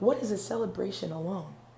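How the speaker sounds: ordinary talk, nothing marked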